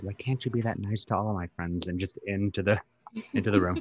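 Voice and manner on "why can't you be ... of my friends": hushed, half-whispered aside. In character, half-whispering a question to a dog named Florence: half-whispering. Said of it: "whispering to Florence".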